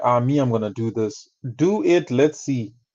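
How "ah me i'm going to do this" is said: mock boastful, bragging politician voice. Mocking campaigning politicians who announce plans: mocking a boastful campaigning politician. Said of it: "He's like".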